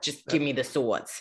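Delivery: put-on Jersey accent. Joking about Aegon demanding swords: Aegon in a Jersey accent. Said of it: "like a Jersey accent".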